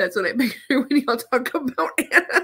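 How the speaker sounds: high voice, laughing while speaking.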